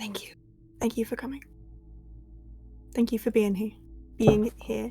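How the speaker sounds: very quiet, breathy, barely voiced whisper. Hugging a friend in character after they arrive: whispering. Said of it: "And I'm just gonna whisper".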